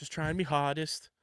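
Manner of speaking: put-on, pseudo Liverpool Scouse accent. Quoting a commenter's impression of Tommy Fleetwood: pseudo-Liverpool Tommy Fleetwood impression. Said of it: "when he does his like pseudo Liverpool accent".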